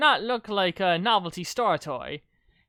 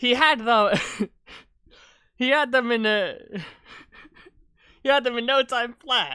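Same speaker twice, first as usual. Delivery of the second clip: laughing over the words, stumbling; 3 semitones higher, 3 dB louder than usual. Reading their own written story aloud, laughing while reading. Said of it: "I'm laughing at my own stupid voice".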